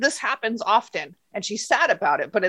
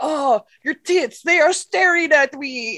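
bad, terrible fake French accent; 4 semitones higher than usual. Retelling a story of a guy talking to a woman: terrible French accent. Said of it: "Terrible French accent".

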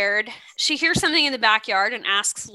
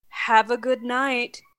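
slow, eerie, unnerving, creepy cadence. Retelling what the pizza man said at the door: imitating a creepy cadence. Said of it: "the creepiest cadence ever".

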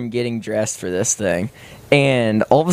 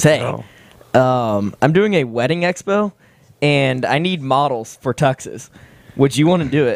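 normal talking voice

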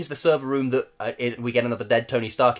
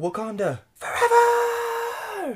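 put-on very high scream in a thick American accent. Reviewing a season's voice acting, the speaker mocks a screamed line with a Michael B. Jordan impression. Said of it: "his really thick American accent".

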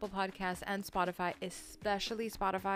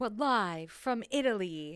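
showy, slow, drawn-out TV host announcer voice; 5 dB louder than usual. Joking about recording an episode in italy, hosty voice. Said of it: "I can totally do my hosty voice".

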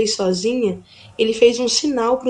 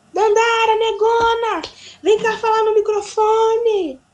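acted-out, very high, drawn-out shout as if amplified; 12 semitones higher than usual. Retelling a call over a sound-truck microphone: imitating Jamil shouting. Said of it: "pegou o microfone e começou a gritar".

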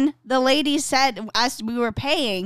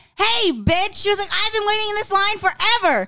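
put-on angry yell, pitched higher; 9 semitones higher than usual. Retelling how a driver yelled at a line-cutter: imitating an angry yell. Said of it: "She was so pissed".

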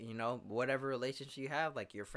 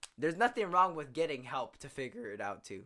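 raised voice cracking mid-line; 5 dB louder than usual. Podcast co-host speaking to the other host; voice cracking. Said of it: "that's my voice is cracking".

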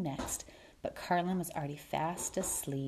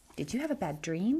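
ordinary delivery

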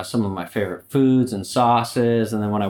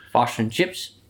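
put-on New Zealand accent. Speaker shows how New Zealanders say a phrase, New Zealand accent. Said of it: "Can you do the infamous fish and chips?".

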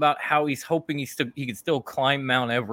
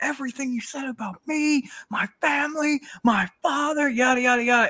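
put-on high, screamed wrestler-style rant; 11 semitones higher than usual. Retelling what the title holder screamed from the corner, retelling a scream. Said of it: "he's screaming like".

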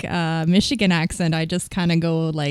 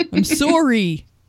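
mangled, bad fake Canadian accent; 6 semitones higher than usual. Mocking the Canadian they live with saying sorry, in a butchered Canadian accent. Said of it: "butcher the Canadian accent".

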